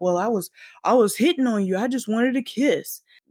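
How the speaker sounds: mock startled voice, feigned surprise. After Janet shoves him off, the speaker retells the man's excuse, mock-startled. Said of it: "He's like acting all startled".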